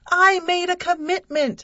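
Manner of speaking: very high, loud, yelled outburst. Reading the first-person narrator's reply during an argument, yelled. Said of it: "I yelled".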